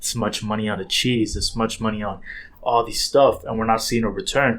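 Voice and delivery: ordinary talk, nothing marked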